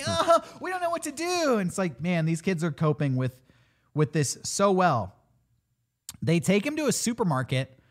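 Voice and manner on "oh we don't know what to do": high-pitched, whiny, helpless panic. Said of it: "they're all like".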